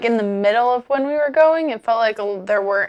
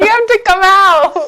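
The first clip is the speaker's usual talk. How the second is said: imitated scream, higher and louder; 10 semitones higher, 9 dB louder than usual. Retelling friends shouting to hidden kids: imitating someone screaming. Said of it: "screaming to us".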